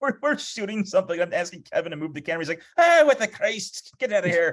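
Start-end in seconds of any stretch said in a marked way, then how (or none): 2.8-4.5 loud, high Irish brogue slipping out. Retelling a friend answering a request to move the camera: imitating a friend's Irish brogue. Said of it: "his Irish brogue would come out".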